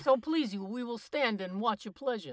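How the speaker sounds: loud, put-on New York accent. Reading a play's lines aloud as asked, New York accent. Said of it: "In a New York accent".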